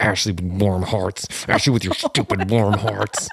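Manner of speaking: annoyed, irritated grumbling, muttered as if to oneself. Retelling being mad while fixing an upload: imitating own mumbling under breath. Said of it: "mumbling under my breath".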